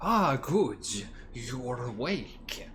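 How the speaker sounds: slick, wet, squishy-sounding monster voice. Game master voices a mind flayer greeting the waking players, wet voice. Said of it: "this sort of um, wet voice".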